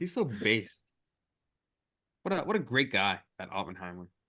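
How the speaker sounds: sarcastic, mock-sincere, dripping sarcasm. Praising Oppenheimer as a joke: mock-sincere sarcastic praise. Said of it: "[name]'s being totally sarcastic".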